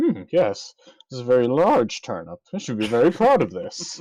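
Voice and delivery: posh, genteel Victorian gentleman voice, swooping. Picturing the man at the vegetable contest: imitating a genteel Victorian gentleman. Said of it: "and go".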